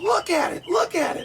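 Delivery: very high-pitched voice. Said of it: "I can't do the high voice he does".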